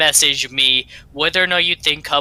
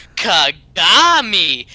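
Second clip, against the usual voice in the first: heavy stress on the ga syllable of Kagami; 4 semitones higher, 5 dB louder than usual. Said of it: "he emphasizes the "ga" for some reason".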